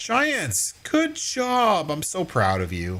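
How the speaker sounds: slow, sing-song, insincere sarcastic delivery. Praising the game developers after finding buyable land: sarcastic praise. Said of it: "So sarcastic".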